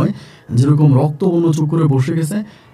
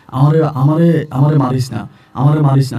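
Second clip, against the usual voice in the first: ordinary talk, nothing marked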